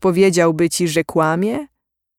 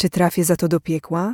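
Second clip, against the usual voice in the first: ordinary delivery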